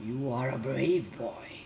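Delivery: low, growling bear voice. A narrator reads the bear's words to a boy who is not afraid, growled. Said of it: "she growled".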